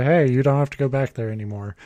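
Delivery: plain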